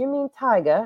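high-pitched phone voice-assistant tone. Retelling what Siri answered when asked to call: imitating Siri. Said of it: "And she goes".

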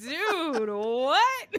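high, loud incredulous blurt. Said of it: "It's like".

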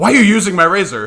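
furious, shrill shout, very high and loud. Retelling his wife barging into the shower: imitating Brooke angrily. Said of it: "Brooke just angrily opened the shower curtain and goes".

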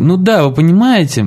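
high, bookish, nerdy voice. Retelling a man's answer to a question, imitating a nerdy voice. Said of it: "ботаническим таким голосом отвечает".

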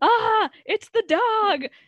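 high, loud, freaked-out squealing cry.

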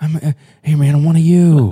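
belted out, high pitched and loud. Doing an impression of Joe Biden: Joe Biden impression. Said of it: "That's actually really good".

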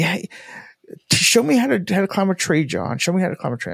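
high, insistent, play-acted hollered plea. Retelling a sister calling up into a tree: imitating sister yelling. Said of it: "she was just, like, yelling at me".

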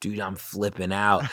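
plain

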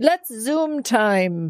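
put-on Irish accent. Speaker quotes something the speaker's dad would say, imitating dad's irish accent. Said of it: "in his Irish accent?".

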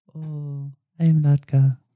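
slow, drawn-out, funny little voice. Telling friends about a comedian's character on Taxi, quoting him: Latka voice. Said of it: "he did like a little funny voice".

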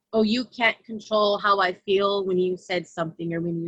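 ordinary delivery

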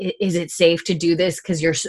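ordinary talk, nothing marked

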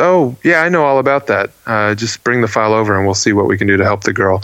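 nonchalant, offhand tone. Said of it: "just kinda nonchalantly says".

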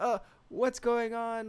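put-on very high, alarmed, drawn-out freak-out. Recounting a story's scene after an attack, acting out someone freaking out. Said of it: "He's just freaking out like".

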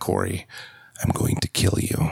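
very deep, lowest possible voice. Retelling what he said after getting the prongs off his neck, in a very deep voice. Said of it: "this is the deepest voice I ever heard".

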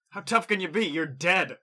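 very loud, high, acted shouting. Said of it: "As you're shouting that".

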